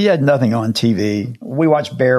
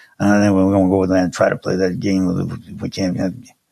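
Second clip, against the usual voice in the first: low, bear-like rumbling voice; 5 semitones lower than usual. Imitating a football coach talking about playing the game: Bear Bryant voice. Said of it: "Bear Bryant talked like this".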